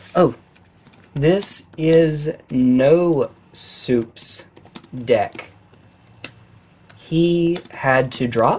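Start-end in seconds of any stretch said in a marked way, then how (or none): 1.1-8.6 much slower pace, speaking slowly. Talking while typing to someone else at the same time: talking slowly. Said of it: "I'm talking slowly because I'm typing".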